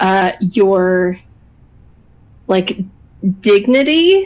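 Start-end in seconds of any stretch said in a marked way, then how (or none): 3.4-4.3 hard stress on the d of dignity. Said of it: "she said that really hard, the D".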